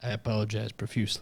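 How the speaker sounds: lifeless, dead flat, very quiet, low monotone deadpan. Closing a show episode, a host apologizes in a dead flat tone. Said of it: "always said in like a dead flat tone".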